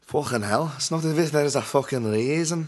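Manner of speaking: poor, high-pitched put-on English accent. Speaker who loves English accents tries one himself: bad English accent. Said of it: "I love English accents".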